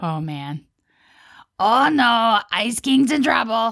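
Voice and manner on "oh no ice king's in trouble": high-pitched, pitched-up cartoon voice. Asked for an impression of a character, doing Ice King impression. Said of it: "You want to give me an impression of a character?".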